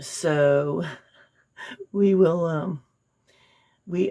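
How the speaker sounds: very slow, words broken by laughter. Talking about checking on someone's situation, laughing while talking. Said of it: "I don't know why I'm laughing".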